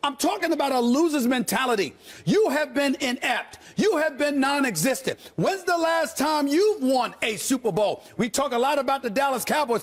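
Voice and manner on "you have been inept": ordinary delivery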